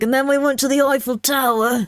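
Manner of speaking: put-on drunken talking. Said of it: "stumbling around drunk going like".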